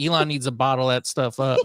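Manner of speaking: usual speaking voice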